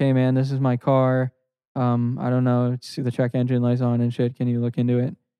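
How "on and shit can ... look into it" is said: ordinary talk, nothing marked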